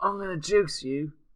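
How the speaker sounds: bad, shoddy put-on northern English accent. Gamer talking about GTA with others on TeamSpeak, in a shitty northern accent. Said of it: "slip into like a shitty northern accent".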